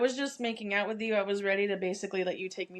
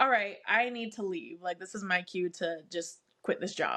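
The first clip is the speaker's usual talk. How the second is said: plain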